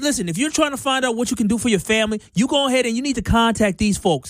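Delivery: put-on New York accent. Recreating a commercial recorded for New York: New York accent. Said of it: "I had a whole New York accent".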